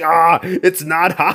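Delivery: slow, long, drawn-out scream. Retelling a game scene where a wrestler burns his hand: imitating Hulk Hogan screaming. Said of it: "he'd stick his hand in the fountain and scream".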